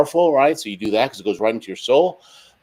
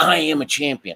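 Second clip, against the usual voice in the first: passionate, forceful, angry-sounding delivery; 3 semitones higher than usual. Showing how to read self-affirmations in the mirror: forceful, as if mad. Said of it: "You read it like you're mad".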